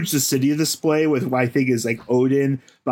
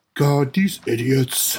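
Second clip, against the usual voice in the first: exasperated, fed-up cartoon dog voice. Imagining Goofy pinching his forehead at others, low Goofy voice. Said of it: "I'm trying to do Goofy's voice, but low".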